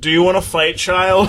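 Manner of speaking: put-on shrill, high, loud little child screaming. Retelling being woken by a small child screaming in their face: imitating a child screaming. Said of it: "is screaming in my face like".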